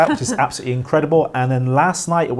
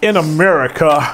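terrible, fake American accent; 3 dB louder than usual. Starting a freaky fact on the show: put-on american accent. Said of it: "That's my American accent".

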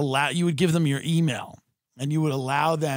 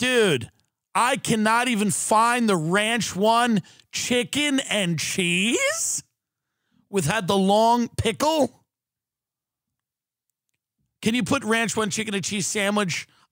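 fed-up, angry, pitched-up tone; 7 semitones higher than usual. Unable to find the sandwich in an image search, the speaker is so angry. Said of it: "I am so angry right now".

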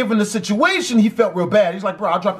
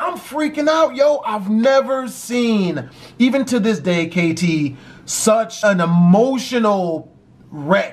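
plain

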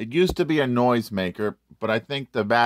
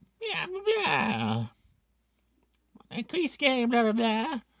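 very high cartoon voice, swooping all around; 14 semitones higher, 6 dB quieter than usual. Describing the Stitch vampire costume from Lilo and Stitch: Stitch impression. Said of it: "That's my Stitch impression".

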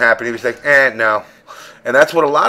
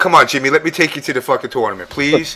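mock pleading, begging tone; 2 semitones higher than usual. Imagining a dad asking to take his son to a tournament: imitating dad pleading. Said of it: "My dad would be like".

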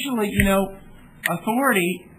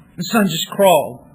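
usual speaking voice

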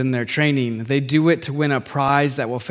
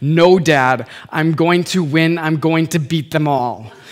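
mock coldest, most straightforward voice; 2 semitones higher than usual. Father retells his son's answer to his advice, imitating son's cold voice. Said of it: "with the coldest, most straightforward voice I've ever heard out of him".

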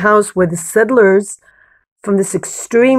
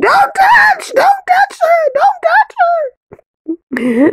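play-acted, very high, swooping, drawn-out scream. Viewer recalls Shoshana running toward the settlers, retelling a scream. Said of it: "And I'm like screaming".

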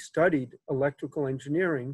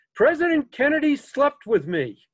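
put-on thick Irish brogue, elderly lady voice, raised and high; 11 semitones higher, 5 dB louder than usual. Retelling a caller's first words on the bookshop phone, in a thick Irish brogue. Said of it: "thick Irish brogue".

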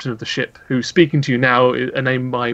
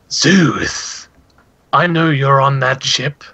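gruff, slow, lilting voice; 4 dB louder than usual. Voicing a caller over the ship's intercom: gruff, listing voice. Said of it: "listing voice comes over the intercom".

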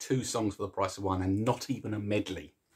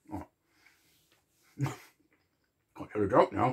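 muffled mumble, talking through a full mouth; 4 dB louder than usual. A speaker eating chocolate between jokes keeps talking, mouth full of chocolate. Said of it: "Mouth full of chocolate".

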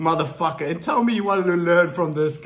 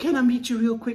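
timid, unsure, high-pitched voice; 6 semitones higher than usual. Speaker mimics a man asking to meet someone; imitating an unconfident voice. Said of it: "His whole tonality of voice just screams lack of confidence".

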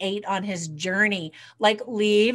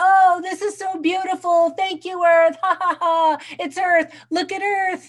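acted-out, very high, exuberant laughing shouts; 9 semitones higher, 6 dB louder than usual. Retelling the first day of an adventure: imitating Mark laughing and yelling. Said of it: "he laughs and yells".

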